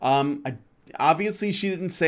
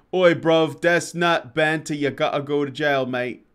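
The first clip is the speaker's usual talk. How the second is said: clumsy, terrible put-on British accent; 3 dB louder than usual. Reading out a viewer's chat message in a terrible British accent. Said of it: "my accent's terrible".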